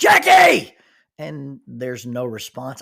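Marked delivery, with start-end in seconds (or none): 0.0-0.7 very high, very loud shout. Retelling calling the name again from the tree: retelling a yell. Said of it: "swing way out and yell".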